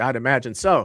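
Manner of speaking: put-on obnoxious character voice. Imagining meeting the actor in that character: imitating Trent in character. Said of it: "in that character".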